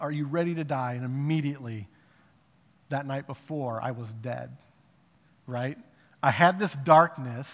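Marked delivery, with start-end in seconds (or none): none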